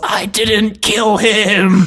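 loud, very high, very slow, unconvincing drawn-out yell. Retelling a character's badly yelled line: imitating a poorly yelled line. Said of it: "'Cause he just yells".

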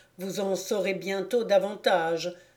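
ordinary delivery

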